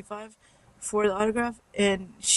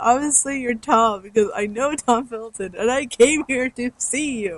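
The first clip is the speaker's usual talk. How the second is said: raised, pointed, sarcastic tone; 3 semitones higher, 6 dB louder than usual. Retelling their reply to the man they came to see, mock-sarcastic retelling. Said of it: "I was sarcastic to him".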